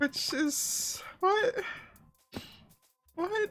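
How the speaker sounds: crying happy tears. Reacting to a large donation just received: crying happy tears. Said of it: "I'm crying".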